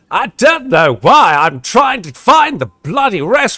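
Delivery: loud, swooping, hammed-up exaggerated voice. Playing Sufyan looking for the restroom: Matt Berry-like voice. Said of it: "it's going Matt Berry hardcore".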